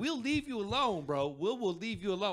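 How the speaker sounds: put-on western cowboy voice. Retelling what the group told a gang leader in a game: cowboy voice. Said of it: "we were talking in our cowboy voices".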